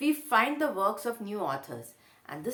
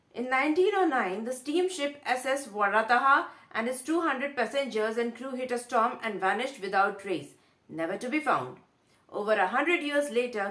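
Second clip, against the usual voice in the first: usual speaking voice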